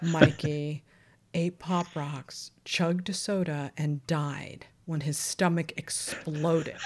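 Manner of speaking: put-on, slow, grave, solemn, deadly serious delivery. Retelling how the director read the line: imitating a deadly serious reading. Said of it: "like it was the most serious thing he'd ever heard in his life".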